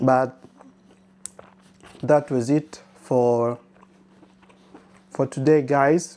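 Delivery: speaking with mouth full while eating. Wrapping up a samosa-making video while eating, talking while eating. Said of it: "forgive me because I'm eating".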